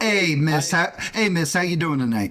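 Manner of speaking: put-on New York accent, coming in suddenly. Playing a caller greeting the person on the line: New York accent. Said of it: "suddenly just New York accent from fucking nowhere".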